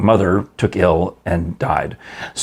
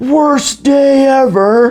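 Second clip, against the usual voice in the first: mock child voice, very high, loud, screamed outburst; 6 dB louder than usual. Retelling how a child reacted to bad news: imitating a child screaming. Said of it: "he screamed".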